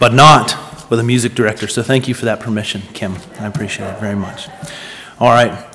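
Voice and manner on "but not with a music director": put-on deep, low, booming voice with Scottish accent. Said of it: "said in his deep, booming Scottish voice".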